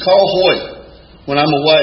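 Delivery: ordinary talk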